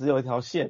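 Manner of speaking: ordinary talk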